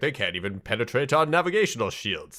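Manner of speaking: ordinary delivery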